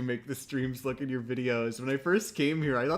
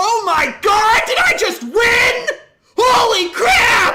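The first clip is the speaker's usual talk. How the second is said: put-on excited screaming, very high and loud; 15 dB louder than usual. Testing the gain after counting down for listeners: fake excited scream. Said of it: "I'm gonna scream".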